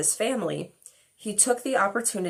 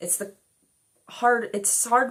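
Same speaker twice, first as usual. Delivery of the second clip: stammered false starts, repeating words; 4 semitones higher than usual. Talking about writing her book, the speaker stumbles over her words; stuttering. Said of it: "I have a stutter".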